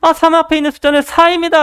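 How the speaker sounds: high, confident, proud tone. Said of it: "당당하게 대답을 했습니다".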